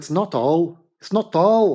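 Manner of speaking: poor put-on Scottish accent. Telling everybody at home a catchphrase in a bad scottish accent. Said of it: "my Scottish accent is almost as bad".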